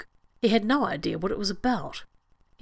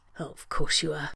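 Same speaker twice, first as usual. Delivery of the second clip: grumbled, grumbling tone; 5 semitones lower than usual. Narrator voicing Kirk answering his best friend Spock, grumbling. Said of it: "Kirk grumbled".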